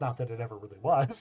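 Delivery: quietly muttered under the breath. Voicing the dwarf making a remark aside: muttered under her breath. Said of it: "she says under her breath".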